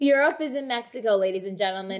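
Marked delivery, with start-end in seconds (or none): none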